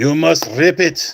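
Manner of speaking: slow, best-effort, put-on Russian accent. Opening a pack of trading cards, in a Russian accent. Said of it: "This is my best uh, Russian accent".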